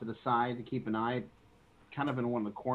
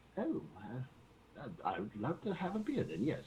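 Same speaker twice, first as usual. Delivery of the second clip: put-on sing-song elderly gentleman's voice; 6 dB quieter than usual. Role-playing a customer ordering from a barkeep, in an old man voice. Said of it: "You do a perfect old man voice".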